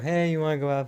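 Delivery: indistinct, half-swallowed mumble. Mocking the first movie's two leads talking to each other, imitate their mumbling. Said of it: "mumbling at each other".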